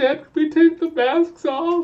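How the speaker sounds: put-on play-acted very high, whiny, tearful crying child voice. Retelling kids asking to take their masks off: imitating crying kids. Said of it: "My kids are, like, crying".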